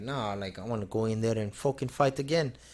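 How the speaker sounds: put-on Irish-sounding accent, tough-guy manner. Imitating a hard-headed fighter after a knockout: Irish-sounding accent impression of Darren Till. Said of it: "That was like an Irish accent".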